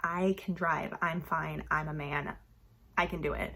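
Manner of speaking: put-on low, macho, swaggering voice. Retelling a book scene where the drunk husband insists on driving: macho manner. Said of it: "in, like, a macho stance".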